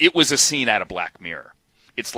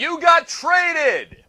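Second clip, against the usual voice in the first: high, drawn-out crowd-style yell. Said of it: "you hear people yelling".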